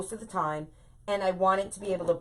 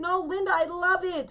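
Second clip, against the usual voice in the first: frantic, very high, drawn-out screaming; 12 semitones higher than usual. Retelling how she screamed at her phone while messaging Linda: retelling screaming at a phone. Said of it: "I was like screaming at it like".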